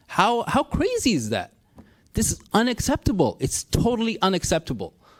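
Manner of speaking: very high, swooping, frustrated indignant outburst. Speaking of still having no access to their belongings, angry and frustrated. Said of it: "the anger that you hear in my voice".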